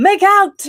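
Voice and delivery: high, loud shouting.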